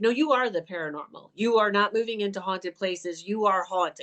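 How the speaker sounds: usual speaking voice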